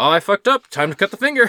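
put-on casual offhand tone. Retelling a film scene where a man offers to cut off his finger: imitating a casual, offhand tone. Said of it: "so casual".

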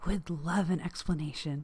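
hushed whisper. A character leans in to whisper again to someone, whispering. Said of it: "I lean in to whisper again".

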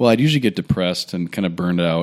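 normal talking voice

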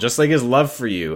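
put-on sarcastic delivery. Redoing a doctor's line from a show: imitating sarcastic delivery. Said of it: "the sarcasm that he's dishing out here".

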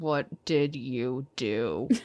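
low, quiet voice spoken through gritted teeth. Player's character confronting Cletus after glowering at her: through gritted teeth. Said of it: "just say through gritted teeth to her".

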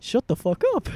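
rough, sloppy, high-pitched cartoon mouse voice. Joking that a theme park mascot beats someone up: Mickey Mouse voice. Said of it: "in Mickey Mouse's voice".

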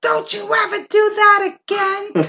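very high, shrill, scolding scream. Retelling being scolded after a prank: imitating someone screaming. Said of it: "She was screaming at me".

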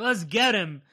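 normal talking voice

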